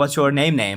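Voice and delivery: ordinary talk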